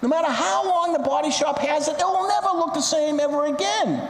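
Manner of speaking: furious yelling. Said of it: "he starts yelling at the officer".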